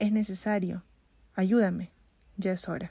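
ordinary delivery

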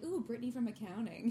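usual speaking voice

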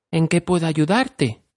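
tender, touched, kindly, sweet and gentle. Reading a story aloud, voice Dorothy asking the groaning man, sweetly. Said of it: "con dulzura".

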